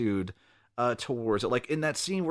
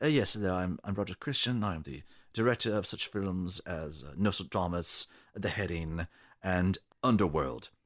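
nice, polite, genteel English gentleman voice; 6 semitones lower, 4 dB quieter than usual. Imitating the director from his interviews: imitating a nice English gentleman. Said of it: "this completely nice English gentleman, like".

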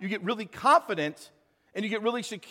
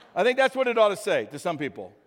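normal talking voice

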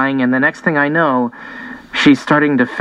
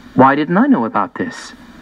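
ordinary delivery

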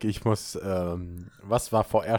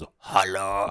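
very, very deep put-on voice. Speaker shows the voice they use when playing a tiny blue game character: very, very deep voice. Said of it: "in so einer ganz, ganz tiefen Stimme".

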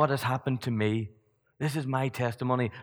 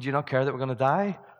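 ordinary talk

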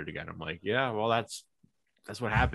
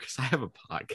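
trying not to laugh, stifling laughter; 5 semitones higher than usual. Retelling their answer to people asking why they can't go out, trying not to laugh. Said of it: "It's so hard to say it without laughing".

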